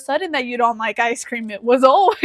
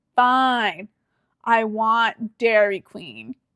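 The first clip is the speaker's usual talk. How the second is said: very slow, dripping sarcasm in a drawl. Retelling a date's grudging answer: imitating a sarcastic reply. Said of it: "all sarcastically".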